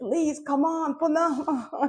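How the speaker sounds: mock, slow, coaxing, drawn-out, high-pitched pleading. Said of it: "pull it up and say".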